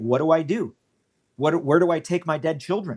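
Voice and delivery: desperate, pleading voice. Retelling a woman's words in a crowd: imitating a desperate plea. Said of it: "So this woman pleading".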